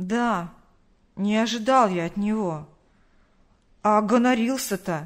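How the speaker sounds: resentful, offended, hurt, drawling voice. Roman answers Pavel about Ilyas, in a resentful drawl. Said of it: "Обиженно протянул Роман".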